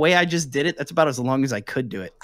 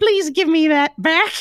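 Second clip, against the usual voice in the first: clown voice in a very high register; 11 semitones higher, 3 dB louder than usual. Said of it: "it goes really high".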